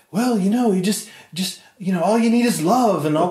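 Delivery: put-on affected British accent. Retelling Paul's reply to a question: imitating Paul's British accent. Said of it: "he still spoke in this British accent".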